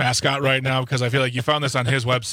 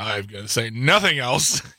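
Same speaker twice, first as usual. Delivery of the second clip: plain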